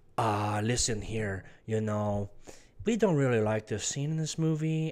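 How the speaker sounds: clumsy, bad put-on Chinese accent, low pitched. Acting out what the cinema chain's owners would say, in an attempted Chinese accent. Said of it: "I can't do a Chinese accent very well".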